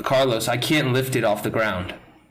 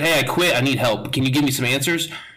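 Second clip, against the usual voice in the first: ordinary talk, nothing marked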